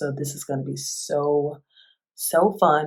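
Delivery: heavily sarcastic, slow, dry, fake enthusiastic tone. Announcing next week's topic of daddy issues: sarcastic. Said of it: "I say that with all sarcasm".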